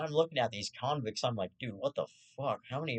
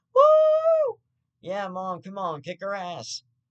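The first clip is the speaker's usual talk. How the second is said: mock, very loud, shrill, swooping excited cheering; 8 semitones higher, 10 dB louder than usual. Speaker recalls cheering on her mom from the back seat, retelling excited back-seat cheering. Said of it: "me and my sister in the back seat being like".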